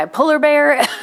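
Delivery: very high, loud put-on Southern accent. Telling listeners a tool name from a lending library; southern accent. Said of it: "I always say it with a southern accent".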